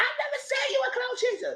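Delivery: squeaky, very high voice. Speaker retells an argument, quoting Candy's reply in Candy's squeaky, rising voice. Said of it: "Candy squeak her voice, she get louder".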